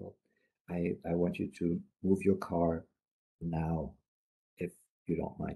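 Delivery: low, cautious voice. Speaker demonstrating a non-assertive request to move a car, low careful voice. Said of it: "in a low voice and and and, and a bit careful".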